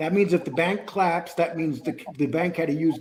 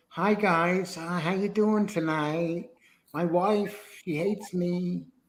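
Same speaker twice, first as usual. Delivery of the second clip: mock womanly voice from a male speaker; 2 semitones higher than usual. Mocking a man said to have a voice like a woman, imitating a man's womanly voice. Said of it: "he sounds like".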